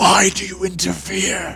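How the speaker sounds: put-on rough, gravelly, raspy voice. Voicing a character who calls out to the group, in a raspy voice. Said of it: "in kind of a raspy voice".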